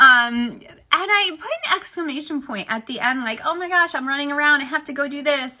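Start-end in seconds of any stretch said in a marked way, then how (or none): none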